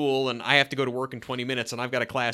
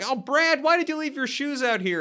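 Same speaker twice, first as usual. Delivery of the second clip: very high, shrill yelling call, acted out; 13 semitones higher than usual. Describing an episode's opening with the shoes left out: imitating Jill yelling. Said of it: "yelling, like".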